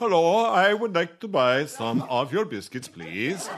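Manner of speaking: silly put-on Swedish accent, pitched high. Asked for an example, the speaker shows shopping in Iceland, Swedish Chef voice. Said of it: "you sound like the Swedish chef from The Muppets".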